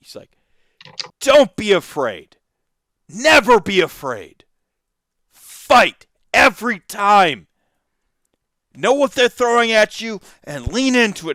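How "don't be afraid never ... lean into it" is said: very high, very loud bellowing, drawn out. Recounting a Brewers win, speaker imitates Decker yelling at the glass. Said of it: "he's just like yelling at the glass".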